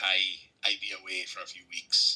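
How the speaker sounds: best-attempt put-on Scottish accent. Imitating a scottish writer for his fans, in an attempted scottish accent. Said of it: "that was my best attempt".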